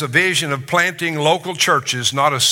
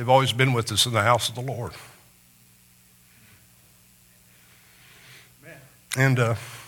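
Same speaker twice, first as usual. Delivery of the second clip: crying while talking, lower pitch; 4 semitones lower, 5 dB quieter than usual. Speaker recalling family memories, crying while talking. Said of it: "I don't know why I'm crying about that".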